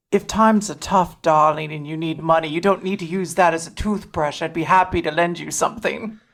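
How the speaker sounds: whispering in a put-on character voice. Playing a character who slyly gets next to Hop: whispering in character. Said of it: "she's just gonna whisper".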